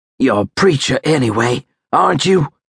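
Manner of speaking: hushed whisper. A frightened soldier who believes he will die speaks to another man, whispered. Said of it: "Joe whispered".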